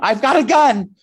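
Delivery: very high, shrill, loud shrieking scream. Retelling sneaking into a room holding a bottle, retelling a scream. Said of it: "I screamed".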